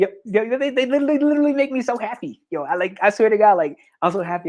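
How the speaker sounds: high, overjoyed stuttering, tripping over words. Speaker addressing viewers as members pop up, stuttering with excitement. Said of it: "I'm stuttering right now. I'm like literally stuttering out of excitement".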